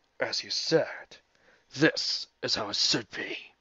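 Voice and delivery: low, raspy, quiet voice. Before the fight, Robotnik answers the frame fighters: low, raspy Robotnik voice. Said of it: "he said in a low, raspy voice".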